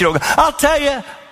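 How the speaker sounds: harsh, scolding tone, very high. Showing the congregation how not to talk to a spouse: mock raised voice. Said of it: "You don't raise your voice".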